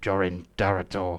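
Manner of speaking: muttering under breath. Voicing a character who mutters the ruler's name under his breath. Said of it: "he kind of mutters under his breath".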